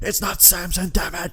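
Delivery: high, raging angry voice. Imitating a boss on a headset, red with anger: imitating Vince McMahon raging. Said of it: "completely red".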